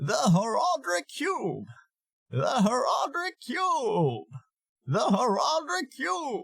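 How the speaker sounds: very high, crackly voice with heavy vocal fry. Demonstrating a character voice and how it is produced: heavy vocal fry voice. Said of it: "very Fry heavy, this voice".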